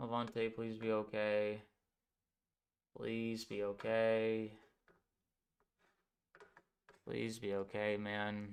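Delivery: anxious, on edge. Stuck on a commercial break, hoping levante is okay: very nervous. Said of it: "I'm very, very nervous right now".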